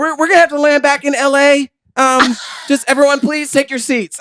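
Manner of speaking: put-on panicked pilot voice. Imitating a pilot announcing a problem on the plane: panicked pilot.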